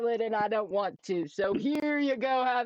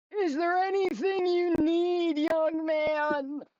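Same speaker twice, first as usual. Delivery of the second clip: put-on elderly man voice, pitched up, man drawn out; 7 semitones higher than usual. On stream, speaker asks a question in character, old man voice. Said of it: "I haven't done this old man voice".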